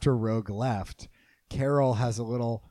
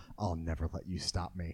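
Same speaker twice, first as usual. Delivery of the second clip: soft, low-volume hushed stage whisper under the breath; 7 semitones lower, 10 dB quieter than usual. Retelling how one character half-whispers a threat to Carol: imitating a half-whisper. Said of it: "she whispers to Carol".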